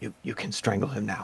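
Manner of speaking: soft, hushed whisper under the breath. During a tabletop game, the speaker's character tells another player, whispering. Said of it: "and I'll I'll whisper".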